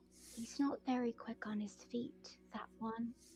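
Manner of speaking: whispered character voice. Playing a character who tells a companion about a foe: whispering in character. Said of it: "she would just whisper".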